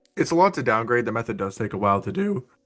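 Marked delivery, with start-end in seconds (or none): 1.1-2.5 voice cracks mid-sentence. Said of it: "Holy voice crack".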